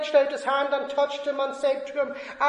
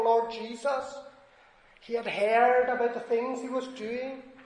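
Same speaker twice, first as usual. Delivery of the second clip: usual speaking voice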